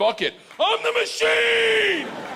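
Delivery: defiant robot shout, very high, slow, booming, huge.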